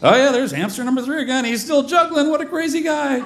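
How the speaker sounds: high, fast, bright storybook narration. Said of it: "so I just have to narrate, like".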